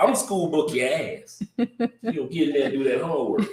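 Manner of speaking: reproving, telling-off voice. Retelling how his mom answered every request: imitating his mom. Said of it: "Everything ended with your ass".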